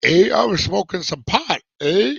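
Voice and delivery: put-on Upper Michigan accent. Retelling how a cellmate from the Upper Peninsula talked: imitating Upper Peninsula accent. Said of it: "this Canadian Upper Peninsula".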